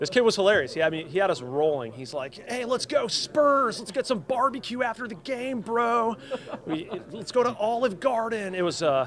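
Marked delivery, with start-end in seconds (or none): 2.5-8.5 very high, childlike best attempt at American accent. Retelling what a hilarious kid said to them, kid's best american accent. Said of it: "doing his best American accent".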